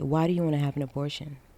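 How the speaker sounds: soft, hushed stage whisper. Retelling what a nurse asked on the phone: imitating a nurse half-whispering. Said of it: "started whispering to me".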